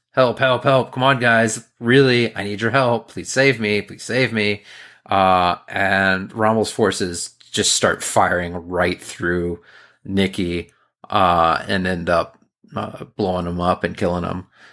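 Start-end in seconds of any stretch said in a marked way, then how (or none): 0.1-4.6 fast, frantic, panicked pleading. Retelling a scene where a character freaks out begging for help: imitating a panicked plea. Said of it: "He's, like, freaking out, like".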